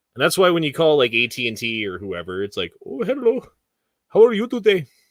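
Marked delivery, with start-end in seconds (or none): 2.9-4.9 very high, loud, fake Indian English accent. Imitating a phone company's support line: put-on Indian accent. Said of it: "I am just doing a voice".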